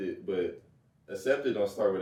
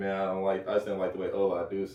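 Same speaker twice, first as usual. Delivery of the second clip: normal talking voice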